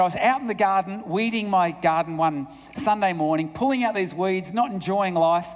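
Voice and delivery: ordinary talk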